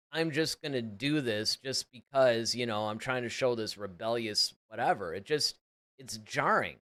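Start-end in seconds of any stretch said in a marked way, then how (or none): none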